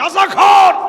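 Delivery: loud, high-pitched mock shouting.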